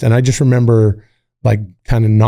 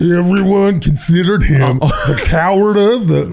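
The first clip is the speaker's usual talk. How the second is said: put-on drunk voice, higher; 7 semitones higher than usual. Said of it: "I think I'm doing a good impression of a drunk".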